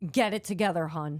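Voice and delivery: put-on snapping, snappy tone. Retelling how a bartender snapped at a friend: imitating someone snapping. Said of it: "snaps and she's like".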